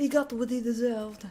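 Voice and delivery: put-on mock French accent. Repeating a game character's line just heard: put-on french accent. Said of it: "that's becoming less and less of a French accent".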